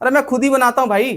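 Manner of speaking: frustrated half shout.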